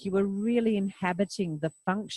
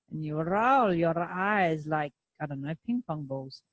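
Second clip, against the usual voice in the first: imitated Israeli accent; 3 semitones lower than usual. The speaker explains how to roll your eyes, in a put-on Israeli accent. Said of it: "in my version of an Israeli accent".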